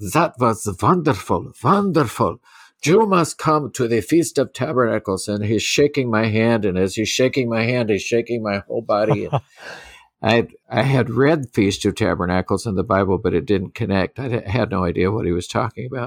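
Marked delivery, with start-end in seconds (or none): 0.1-5.3 put-on heavy German accent laid on thick, enthusiastic. Retelling what Max said after the service, in Max's thick German accent. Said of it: "He had a very thick German accent".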